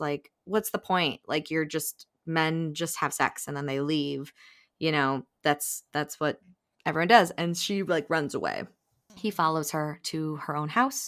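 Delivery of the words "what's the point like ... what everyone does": ordinary talk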